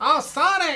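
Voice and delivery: high voice through the nose. Criticizing how the character sounds, nasal Tails impression. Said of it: "Like he's talking through his nose".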